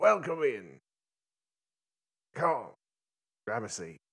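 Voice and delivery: cackling all through, high and swooping. A game master voices a character greeting the players through a door, cackling. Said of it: "You hear him kind of cackling".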